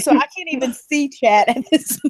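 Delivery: words breaking up with hard laughter. Reacting to funny chat comments, laughing hard while talking. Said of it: "I am literally laughing so hard I'm crying".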